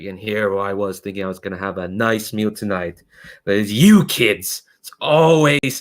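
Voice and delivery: contemptuous, sneering gangster villain voice. Voicing a mobster villain confronting some kids: sneering villain voice. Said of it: "he sneers at a lot of".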